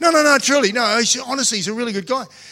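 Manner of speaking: acted cheerful, bright voice. Retelling what they told a motorbike shop guy: imitating own happy tone. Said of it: "But I said it in a happy way".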